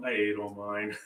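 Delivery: sounding sad. Telling the others your candy is gone: sad voice. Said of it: "You sounded so sad".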